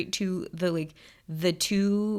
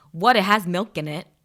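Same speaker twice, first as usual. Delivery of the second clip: put-on Long Island accent; 7 dB louder than usual. Telling a story about mom and a picky sister, imitating mom's Long Island accent. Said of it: "in her best Long Island accent".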